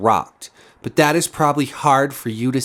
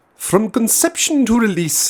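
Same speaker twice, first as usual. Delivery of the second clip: fake British accent, pitched up; 9 semitones higher than usual. Reading a statement aloud, in a put-on british accent. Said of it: "I'll do another British accent".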